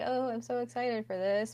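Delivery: acted thrilled tone, meant sarcastically. Recounting what they said before recording about the bracket checkup: retelling a sarcastic remark. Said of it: "I was just being sarcastic".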